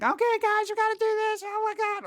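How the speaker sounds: screechy, squeaky anime character voice, very high. Complaining about an announcer, quoting them in a squeaky anime character voice. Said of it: "a squeaky anime character".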